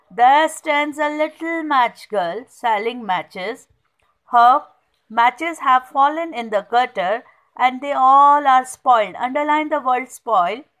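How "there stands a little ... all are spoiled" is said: usual speaking voice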